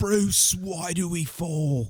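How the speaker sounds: slow, deliberate, drawn-out, unhurried delivery. Answering with his own try at the same impression: Michael Caine impression. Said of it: "I can do that one".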